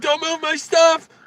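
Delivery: mock shout, very high, very loud, shrill, near tears. Retelling what a driver said while moving his stuff: imitating an upset driver. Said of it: "He got so upset".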